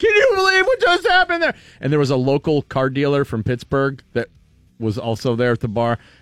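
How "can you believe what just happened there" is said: very high, loud, overexcited whooping voice. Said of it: "doing the Steeler fan thing".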